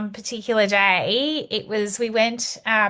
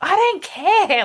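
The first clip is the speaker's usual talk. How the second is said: put-on, very high, loud, exasperated and frustrated outburst; 9 semitones higher, 5 dB louder than usual. Retelling being asked why they want sugar, the speaker acts out a frustrated reply. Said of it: "I was just so frustrated".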